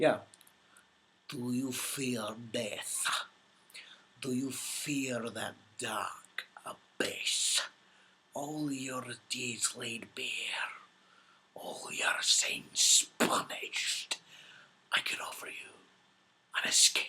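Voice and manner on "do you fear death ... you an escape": very slow, drawn-out, breathy whisper. Answering a question asking for an impression, the speaker does a Davy Jones impression. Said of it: "ever done an impression of Davy Jones".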